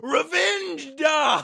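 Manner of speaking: high-pitched yell. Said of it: "Lucario and yells".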